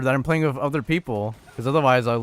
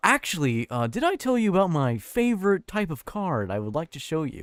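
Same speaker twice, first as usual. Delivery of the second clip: light put-on American voice, quieter; 3 semitones higher, 4 dB quieter than usual. Mocking how the other speaker just sounded, American Psycho impression. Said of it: "a light impression of American Psycho".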